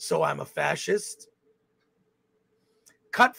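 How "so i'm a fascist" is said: slow, rough, drawn-out superhero voice. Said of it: "and it's Ben Affleck Batman voice".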